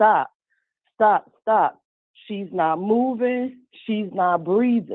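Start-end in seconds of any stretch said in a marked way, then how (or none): 0.0-1.8 mock urgent, desperate, pleading repeated yell. Recounting being beaten, acting out how she yelled at him; retelling her yelling stop. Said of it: "she's yelling".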